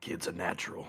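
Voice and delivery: quiet whisper under the breath. Voicing Nox, who nods and praises the kid: whispering under his breath. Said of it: "just under his breath whisper".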